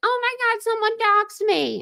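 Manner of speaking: high-pitched sudden outburst. Retelling what Brittany said about being doxed: imitating Brittany. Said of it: "And then she's like".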